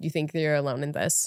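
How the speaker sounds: plain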